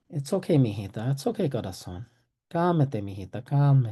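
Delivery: soothing, calming, comforting reassuring tone. Showing how to calm a distressed child: comforting. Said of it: "be physically present and comforting".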